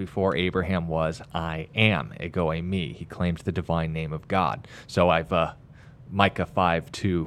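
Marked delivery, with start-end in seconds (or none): none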